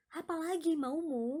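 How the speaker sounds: high, loud, irritated and angry tone. Explaining how the sentence is usually said, with annoyed, high angry intonation. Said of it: "high intonation of annoyed or angriness".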